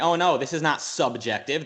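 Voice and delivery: normal talking voice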